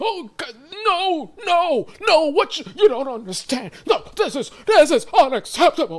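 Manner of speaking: very high, loud, put-on frustrated exasperation. Mocking a liar who pretends frustration to seem believable: imitating fake frustration. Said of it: "you try to pretend like you're frustrated".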